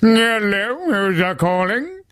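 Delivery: very high, very slow, jokey funny voice. Retelling how dad answers the phone expecting a mate: imitating dad's funny phone voice. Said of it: "he'll think it's one of his mates or whatever, and he'll be like".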